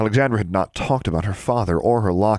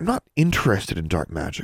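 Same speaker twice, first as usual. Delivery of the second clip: plain reading voice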